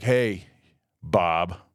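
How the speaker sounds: very low, dropped, deep put-on voice. Imitating a trophy elk greeting a hunter, in a deep voice. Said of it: "He's got a deep voice like that".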